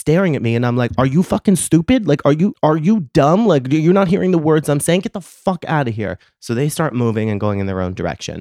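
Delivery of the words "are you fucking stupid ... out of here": enraged, furious, high-pitched screaming. Retelling a confrontation with a young woman who just stared: retelling screaming at someone. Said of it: "So now I'm screaming at her".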